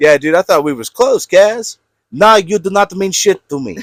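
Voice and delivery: put-on Russian accent. Playing a scene addressing someone, in a put-on russian accent. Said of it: "That's supposed to be me doing like a Russian accent".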